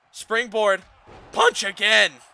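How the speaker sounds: very loud, high voice cracking and breaking. Commentator calling the match as Joe picks Colby up, voice cracking. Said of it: "Don't mind the voice crack".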